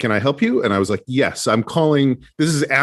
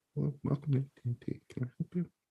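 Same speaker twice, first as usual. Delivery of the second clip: very quiet, barely audible, hard to make out; 3 semitones higher, 16 dB quieter than usual. Imitating a greeting they heard on a call, in a very quiet voice. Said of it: "You're very quiet".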